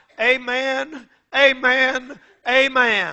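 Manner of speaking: feeble, hushed dying voice, amens drawn out. Retell Daniel Webster's response near death after others read to him, imitating Daniel Webster's feeble voice. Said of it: "said in a feeble voice".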